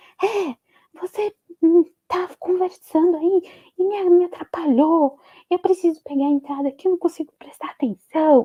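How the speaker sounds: put-on, high, yelled scolding complaint. Retelling how a driver yelled at her in the car: imitating a man yelling. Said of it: "esse homem me grita e fala assim".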